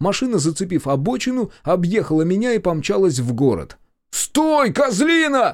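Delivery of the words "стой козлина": shrill, very high yelling. Still yelling after a car that sped past and away, yelling. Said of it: "продолжал орать я".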